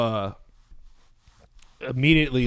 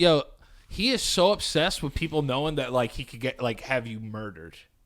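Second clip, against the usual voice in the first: ordinary delivery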